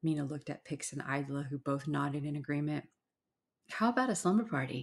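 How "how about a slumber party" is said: light, playful tone rising at the end. Mena proposes a plan to Pix and Idla, playful and questioning. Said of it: "Mena stated in a playful, questioning way".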